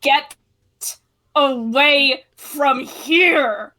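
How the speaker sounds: wild, loud growl, stretched and drawn out. Voicing a half-toon who warns the group to get away, growling. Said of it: "he just growls".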